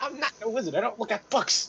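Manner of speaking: high, loud feisty outburst. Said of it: "He gets a little bit feisty about that".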